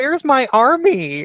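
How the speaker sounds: very high-pitched, loud damsel voice. Imitating Anita Sarkeesian calling for her army: imitating Anita Sarkeesian damseling. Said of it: "almost like an affectation of damseling".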